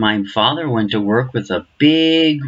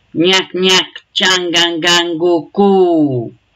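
put-on high babbling baby talk, go drawn out; 7 semitones higher, 4 dB louder than usual. The narrator voices Sammy talking with the mosquitoes, Sammy's baby talk. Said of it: "Sammy's baby talk".

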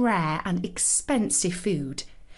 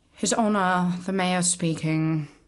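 worn-out, weary, tired tone; 3 semitones lower than usual. Narrator reads the mayor answering the police chief's phone call: weary voice. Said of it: "he said in a weary voice".

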